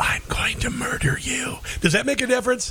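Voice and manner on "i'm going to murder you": very slow, soft, drawn-out whisper. Answering a complaint about raising voices by whispering the line instead: whispered. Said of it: "let me whisper it then".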